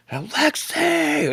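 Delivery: rough top-of-the-lungs yell, very high pitched. Retelling standing up in the stands to call a player: retelling a shout at the top of lungs. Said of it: "at the top of my lungs".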